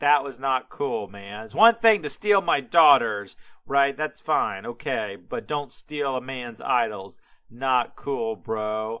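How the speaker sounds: heavy, knowing, acted-out sarcasm. Retelling Uncle Laban's complaint about stolen idols: imitating a sarcastic tone. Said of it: "You get the sarcasm in that".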